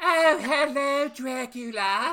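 mocking fake British accent. Mocking the british accents in a dracula film, the speaker does a bad british accent. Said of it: "Those British accents are just the worst".

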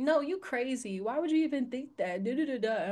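ordinary delivery

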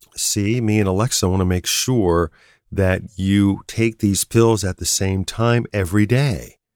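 ordinary talk, nothing marked

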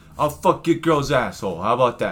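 put-on Boston accent. Joking back at the other speaker's tough-guy bit: Boston accent. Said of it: "we in Boston now?".

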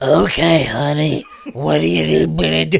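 rough, creaky voice, creaking through. Retelling a call girl's phone line in a film: Harvey Fierstein voice. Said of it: "It's like Harvey fucking Fierstein".

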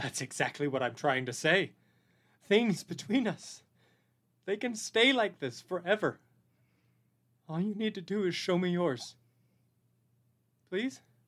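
speaking through tears, crying. Lillian answers the one who promised not to judge, crying while talking. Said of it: "Please stop crying".

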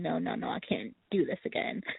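put-on crying voice. Recalling freaking out over unbearable pain, the speaker repeats past words, retelling crying. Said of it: "I remember crying and going".

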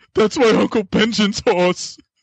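play-acted very high, upset, whiny complaining. Quoting an actor's favorite line from a show: imitating a whiny line. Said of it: "he's really good at being whiny".

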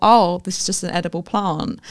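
normal talking voice

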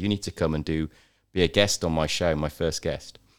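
plain

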